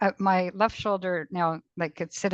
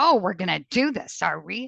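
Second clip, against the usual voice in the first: mock cross, angry, confrontational squaring-up tone. Speaker retelling what they said as they went over their ankle, mock-angry tone. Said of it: "like in my angry tone".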